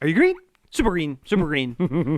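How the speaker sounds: ordinary talk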